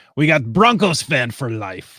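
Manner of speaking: played-up, put-on pirate voice. Taking turns reading names aloud, in a pirate voice. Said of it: "in our best pirate voice".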